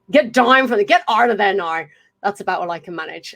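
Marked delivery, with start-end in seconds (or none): 0.1-1.8 rough, admittedly poor, put-on Irish accent. Speaker attempts the line again in an accent: not-good Irish accent. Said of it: "I'm not going to say it's a good accent".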